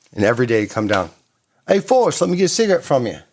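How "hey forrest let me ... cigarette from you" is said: put-on thick Australian accent, pitched up. Retelling a neighbour bumming a cigarette daily: imitating Mel Gibson's Australian accent. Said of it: "he actually does have a pretty thick Australian accent".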